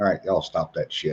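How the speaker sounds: unhurried, very calm, low, soft PA voice. Retelling an announcement over the PA during chaos, retelling a very calm voice. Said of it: "this very calm voice comes over the P A".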